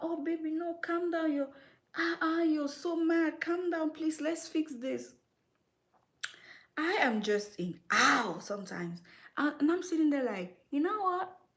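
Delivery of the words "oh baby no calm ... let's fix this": mock high, soothing, pleading voice. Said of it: "they would tell them".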